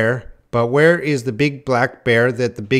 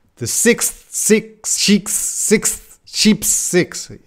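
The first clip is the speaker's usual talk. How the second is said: slow, careful, word-by-word delivery; 9 semitones higher than usual. Practicing a tongue twister, too slow tongue twister. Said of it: "That's too slow".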